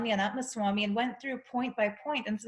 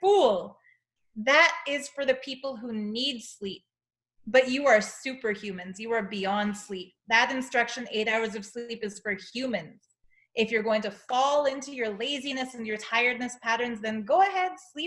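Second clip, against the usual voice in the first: usual speaking voice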